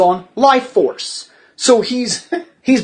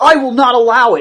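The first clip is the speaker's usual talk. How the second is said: mad, angry, declaring outburst; 2 semitones higher than usual. Retelling how a character stood up and got mad: imitating someone getting mad. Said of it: "he gets mad".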